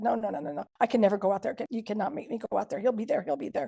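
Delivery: put-on frantic, terrified, panicked pleading. Recounting a night of shock, repeating what the speaker said then: retelling own panic. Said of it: "And I just panicked and said".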